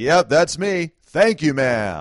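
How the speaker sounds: high, loud, slow, grinning and friendly. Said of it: "I grinned widely and answered".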